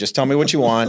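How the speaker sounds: sarcastic voice. Retelling own reply to cold callers: retelling a sarcastic reply. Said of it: "I'll kinda throw 'em a little sarcastic back".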